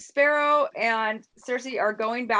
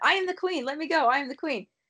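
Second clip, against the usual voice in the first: mock screaming, higher pitch; 3 semitones higher than usual. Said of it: "Marjorie was screaming".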